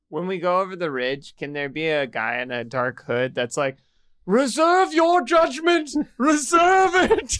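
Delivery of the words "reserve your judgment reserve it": very high, loud villain cry. Speaker imagining a figure waiting over the ridge: Voldemort voice. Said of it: "Why do you sound like you're trying to be Voldemort".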